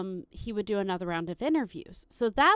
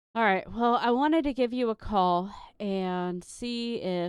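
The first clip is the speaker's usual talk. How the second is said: put-on dejected, downcast, gloomy, depressed delivery. Retelling a man's call offering a job, imitating his depressing tone. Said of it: "his tone of voice is really depressing".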